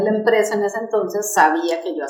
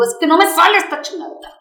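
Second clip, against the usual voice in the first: play-acted shrill, fed-up, exasperated outburst, very high; 9 semitones higher, 4 dB louder than usual. Retelling getting angry after many takes of a laugh: imitating own angry complaint. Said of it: "ya me empiezo a enojar".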